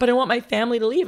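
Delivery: high-pitched, tearful, upset, crying voice. Retelling how he reacted when told you'd leave for culinary school: imitating someone crying. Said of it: "like he was crying".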